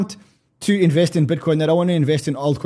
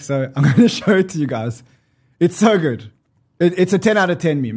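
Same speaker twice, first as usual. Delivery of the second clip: speaking while unable to stop laughing. Speaker about to show viewers a meme, laughing while talking. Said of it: "I can't stop laughing".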